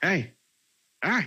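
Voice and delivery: high, sudden, mock yelling. Retelling a story, the speaker acts out Whisper yelling at Clarice. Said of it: "Whisper just starts yelling at".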